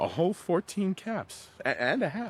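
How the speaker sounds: mocking, sarcastic tone with sing-song swoops. Answering a child who offers fourteen and a half caps: sarcastic. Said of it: "we're gonna be sarcastic with her".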